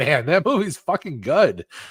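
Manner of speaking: high-pitched, excited, amazed exclamation. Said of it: "I was like".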